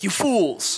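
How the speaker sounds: sharp, angry, high voice. Reading a rebuke from Jesus aloud like Gandalf: Gandalf voice. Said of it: "I almost read it like Gandalf in The Lord of the Rings".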